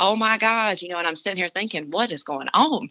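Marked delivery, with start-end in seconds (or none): 0.0-0.8 high, excited screaming cry. Speaker retells people coming through the woods, retelling people screaming. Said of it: "they were just screaming".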